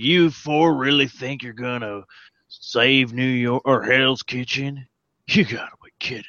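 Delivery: country accent slipping in, badly done. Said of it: "when did I become country?".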